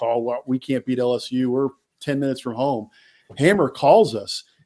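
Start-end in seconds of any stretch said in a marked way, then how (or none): 0.0-2.9 put-on annoyed, ticked-off grumbling. Retelling leaving the bar thinking the game was lost: imitating being ticked off. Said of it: "we're ticked off".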